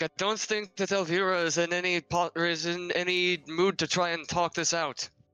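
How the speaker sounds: high, loud, called-out shout. Voicing a character turning away and calling to the party: shouting out. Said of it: "kinda shouts out".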